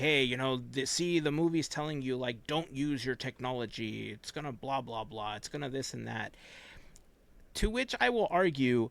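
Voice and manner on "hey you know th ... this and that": ordinary delivery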